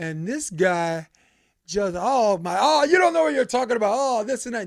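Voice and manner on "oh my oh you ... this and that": mock top-of-the-lungs yelling, high and rattled off. Speaker retelling a guy arguing with them about a rule, imitating someone yelling. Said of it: "He's yelling at the top of his lungs".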